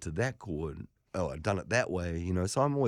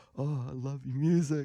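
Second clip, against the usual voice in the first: put-on nervous stammer, higher pitch; 6 semitones higher than usual. Retelling own words on first meeting an admired musician: imitating own stammering. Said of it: "stammered like this little egg and went".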